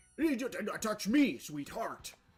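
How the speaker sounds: stagy, theatrical, over-articulated delivery. Mocking a man in a video by imitating him: over-enunciated lines. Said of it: "over enunciating his lines".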